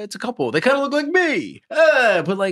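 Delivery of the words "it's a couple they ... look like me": very high, loud, swooping exaggerated celebrity caricature. Imagining what Rob Reiner would say: Rob Reiner impression. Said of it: "I could see Reiner being like".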